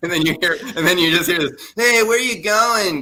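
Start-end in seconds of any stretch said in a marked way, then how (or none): 1.7-3.0 high, weird, put-on Boston-Connecticut accent. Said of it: "weird Boston, Connecticut accent".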